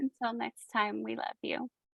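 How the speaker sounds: tearful, crying while speaking. Signing off to listeners at the end of the episode, crying. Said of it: "You're crying".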